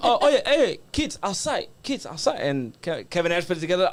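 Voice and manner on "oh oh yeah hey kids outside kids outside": pitched-up broken English phrasing. Retelling how a father asked a wrestler to meet his kids: imitating father's broken English. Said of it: "And his broken English".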